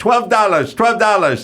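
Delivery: put-on heavy, thick Spanish accent, very high-pitched. Speaker retells overhearing a woman in LA, thick Spanish accent. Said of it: "the woman with the thick a Spanish accent".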